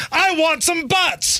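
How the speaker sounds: slow, high-pitched angry yelling.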